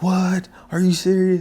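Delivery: mock surprised whispering. Retelling everyone at school learning who his father is, imitating people whispering in surprise. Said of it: "everybody started whispering like".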